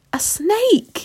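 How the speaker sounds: very high, shrill, frightened yell. Reading a story aloud, voicing a man pointing at the ground, shouting. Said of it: "he shouted".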